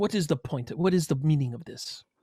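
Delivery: put-on Greek accent. Narrating a game scene, voicing a Numenari woman confronting the listeners, Greek accent. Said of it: "she speaks with a Greek accent".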